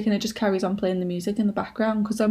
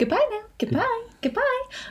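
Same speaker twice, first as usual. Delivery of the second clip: bad put-on American accent, very high, swooping; 14 semitones higher than usual. Podcast host signs off the episode doing a terrible Barbie American accent. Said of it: "That was a terrible accent".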